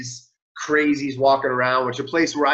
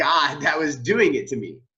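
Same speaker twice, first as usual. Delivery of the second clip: ordinary talk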